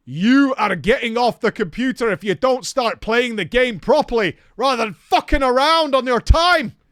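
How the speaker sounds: booming, very loud yell. Speaker recalls their stepfather catching them on the computer as a kid: retelling a loud, booming voice. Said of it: "he says in a very loud, booming voice".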